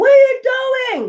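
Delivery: mock shriek, very high-pitched scream. Retelling how a man behind them was screaming: imitating a man screaming. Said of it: "He was screaming like".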